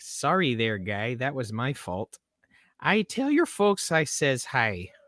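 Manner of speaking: Midwest accent tipping into Chicago. Trying the sentence again in an accent: almost Chicagoan accent. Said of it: "sounded almost too, like, Chicagoan".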